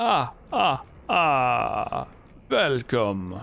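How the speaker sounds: every word stretched out, slow and sing-song. Showing which old Dracula voice people imitate: Sesame Street's Count voice. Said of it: "somebody doing an impression of, um, uh, Sesame Street's Count".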